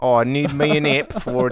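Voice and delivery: put-on, fake Australian accent. Joking with others about what a lift is called, speak in a mock Australian accent. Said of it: "Now he's doing Australian".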